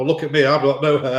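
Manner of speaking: usual speaking voice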